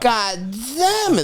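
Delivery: put-on weird high little baby voice, damn drawn out. Imitating a man who kept screaming a curse: weird little baby voice. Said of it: "and like that weird little baby voice".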